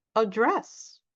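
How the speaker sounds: address stressed on second syllable. English lesson on noun-verb pairs, stress on second syllable of 'address'. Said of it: "a verb if we stress the second syllable".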